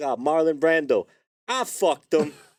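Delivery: very high, drawn-out, boastful yell. Recalling a comic's running joke on spotting a famous person: yelling as Andrew Dice Clay. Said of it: "he would just randomly yell".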